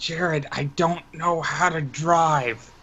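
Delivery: whispering. A player character turns to Jared in a game scene, whispering. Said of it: "and I whisper".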